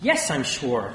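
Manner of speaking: curt, sharp, snapped. A doctor answers the tech's skeptical question, snapped. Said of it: "I snapped".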